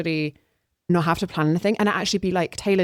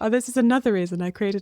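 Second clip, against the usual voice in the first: teasing mocking voice, higher; 4 semitones higher than usual. Retelling what the other speaker just said: mockingly imitating the other speaker. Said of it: "I shouldn't be making fun of you".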